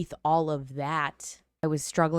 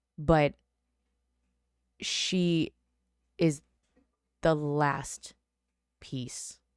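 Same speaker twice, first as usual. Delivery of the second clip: holding back tears, trying not to cry. On a podcast episode, praising a family member, holding back tears. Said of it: "I don't want to cry".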